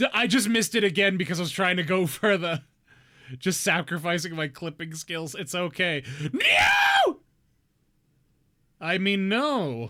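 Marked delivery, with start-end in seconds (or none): 6.3-7.2 sudden, very high, loud, startled yell. Just missed again while playing, talking to viewers: sudden yell. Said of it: "Sorry if that yell was loud".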